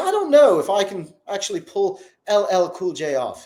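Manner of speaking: put-on imperfect British accent. Retelling what an older interviewer said to a famous guest, in an imperfect British accent. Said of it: "my British accent probably isn't the greatest".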